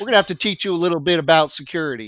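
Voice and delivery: put-on Tennessee accent, best effort. Imitating an expert calling to correct the video: Stephen Blackwell Tennessee accent. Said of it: "my best Stephen Blackwell Tennessee accent".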